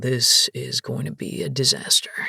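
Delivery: very low, muttered under the breath. Reading a story aloud, the bodyguard reacting: said under his breath. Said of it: "he says under his breath".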